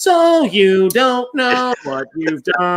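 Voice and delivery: slow on-air radio announcer voice. Recalling a character in Metalhead who talked in that radio voice, imitating a radio voice. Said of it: "talking kind of like in that radio voice".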